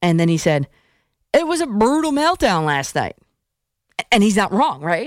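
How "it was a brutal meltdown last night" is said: put-on Texas accent, high and swooping. Quoting what a caller said on the phone, in a Texas accent. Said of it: "I'm doing the Texas accent".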